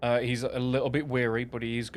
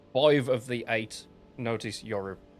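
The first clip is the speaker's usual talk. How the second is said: ordinary talk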